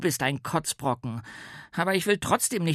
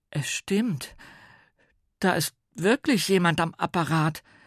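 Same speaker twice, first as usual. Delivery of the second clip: stuttering, halting delivery, words tripping out; 3 semitones higher than usual. Paul backs up Mia's claim in front of the others, stammering. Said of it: "stammelte Paul".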